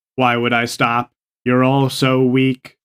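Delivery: mechanical robot-like voice. Asked whether they will stop, a player refuses and taunts the others in a robot voice. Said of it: "Why do you sound like a robot".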